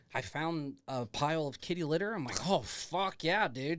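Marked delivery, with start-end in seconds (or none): 2.4-3.7 put-on voice of a raving drunk maniac. Retelling finding kitty litter while in character: imitating own drunk maniac act. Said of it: "acting like a drunk maniac".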